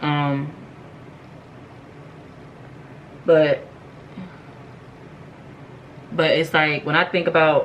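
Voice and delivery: crying while talking. Speaker apologizes to the audience for getting emotional mid-story, crying while talking. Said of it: "I really don't mean to be like crying".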